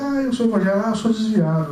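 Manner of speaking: ordinary talk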